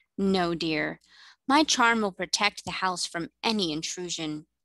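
plain

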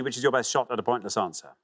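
ordinary talk

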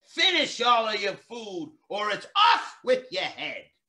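loud, shrill, screeching headmistress voice. Narrator reading a story, voicing the headmistress at mealtime, screeching headmistress. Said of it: "the headmistress screeched".

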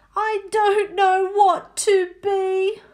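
loud, high, long drawn-out wailing cry. A girl who can't choose a costume closes her eyes: wailing out loud. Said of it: "She closed her eyes and wailed out loud".

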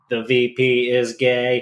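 very slow, flat, monotone text-to-speech robotic voice. Narrating how meeting-room speakers played text-to-speech, in a robotic voice. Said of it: "in a robotic voice".

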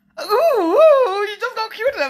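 high, loud, squealing gush.

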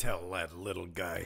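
put-on sarcastic tone. Retelling how a man repeated another man's words back, very sarcastically. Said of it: "he said very sarcastically".

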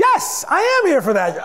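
put-on formal, polite voice, pitched very high. Retelling going in about a loan, speaking in a polite job-interview voice. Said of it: "I spoke in my job interview voice".

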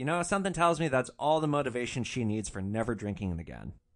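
usual speaking voice

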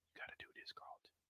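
whispering. Retelling a scene, quoting one man whispering to another. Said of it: "even though he was whispering".

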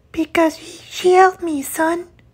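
exhausted, weary woman's voice. A mother steps out of the shadows, answering her son's demand; Silvira's exhausted voice. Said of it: "exhausted voice of a mid-aged lady".

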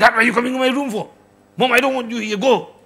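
put-on, loud, high-pitched screaming outburst. Acting out an internet-addicted child when a parent enters the room: imitating someone screaming. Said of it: "he starts screaming".

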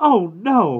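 very high, loud, exclaiming cry. Narrator voicing a mother hearing the milk cow got out again, exclaiming. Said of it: "Mama exclaimed".

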